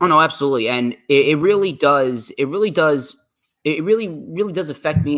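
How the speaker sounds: high-pitched stammering, tripping over repeated words. Asked whether the new background checks are smart, answering while stuttering. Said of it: "I'm sorry if I'm stuttering around".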